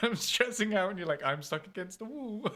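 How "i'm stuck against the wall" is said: mock calm, unbothered, nonchalant delivery. Imitating the other speaker calmly running out of shotgun ammo: imitating someone calmly unbothered.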